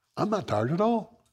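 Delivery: bright, bouncy, perky, very high voice. Quoting how he answered a complaint about being tired, mock-perky, bright tone. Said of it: "he said it like this. ... He was like real perky".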